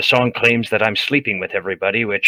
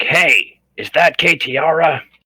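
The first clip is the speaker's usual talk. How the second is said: very loud, high, very slow drawn-out yell; 6 semitones higher, 3 dB louder than usual. Calling out alone from a cell to someone nearby: yelling really loud. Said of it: "I'm just going to yell really loud".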